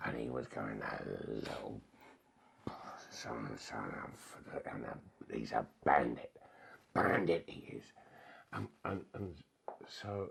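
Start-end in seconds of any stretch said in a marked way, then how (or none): 0.8-7.8 very low, creaky, rough, angry grumbling mutter. Retelling someone's complaint before training: imitating angry grumbling. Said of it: "he was mumbling and grumbling, and he was angry".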